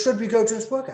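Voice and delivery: put-on British aristocrat voice. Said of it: "they think I'm British all of a sudden".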